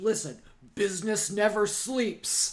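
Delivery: very loud, slow, cranky, angry dad voice. Retelling a scene where Daddy talks on the phone: imitating a cranky, angry dad. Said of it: "talking on the, his phone to somebody crankily and angry".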